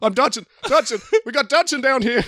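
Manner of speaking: mock yelp, pitched very high. Describing Dodgson on the ground about to be eaten by a dinosaur, Dodgson crying for help. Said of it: "when Dodgson cries out for help".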